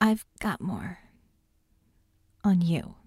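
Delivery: barely-there, very small, tiny voice. Speaking to John after another long pause, very small voice. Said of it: "in a very small voice".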